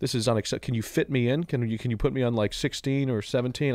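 ordinary talk

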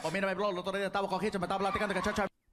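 very fast put-on speech. Acting out a Puerto Rican answering a question: imitating rapid Puerto Rican Spanish. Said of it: "speak Spanish like there's a time limit".

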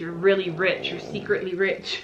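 usual speaking voice

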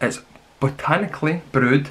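slow, deliberate, careful word-by-word enunciation. Reading a cola can's label aloud, saying it slower to get it right. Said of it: "I had to say that slower".

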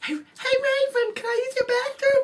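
very high-pitched, loud character voice. Quoting a That's So Raven scene: Corey impression. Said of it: "your impression of Corey".

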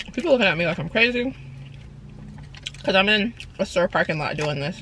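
talking with mouth full. Eating in a store parking lot while talking to camera, talking with mouth full. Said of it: "not supposed to talk with your mouth full".

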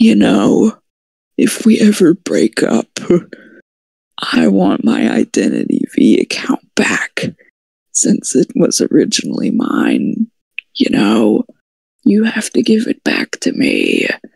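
put-on devilish, sinister whisper. Retelling what a boyfriend said during a game: imitating a devilish whisper. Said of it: "it whispers into my ear like the devil".

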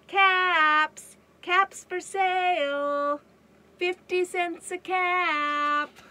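very loud, high vendor cry, "cap" drawn out. Reader of a story voices the peddler walking back to town, calling out wares. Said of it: "Once there was a peddler who sold caps".

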